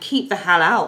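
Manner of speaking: ordinary delivery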